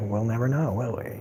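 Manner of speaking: flat, very quiet delivery. Quote a line from the movie to praise the actor, imitating Tom's deadpan delivery. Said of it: "Tom's just deadpan delivery of".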